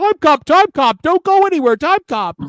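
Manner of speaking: very high-pitched, loud calling out. Retelling how Tony Khan begs the arena crowd to stay: imitating Tony Khan. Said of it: "he comes out and he's like".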